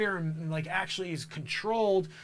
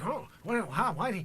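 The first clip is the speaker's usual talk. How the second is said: mock mumbling, unclear speech impression. Acting out how the future president talks: imitating his mumbling speech. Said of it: "he talks like that".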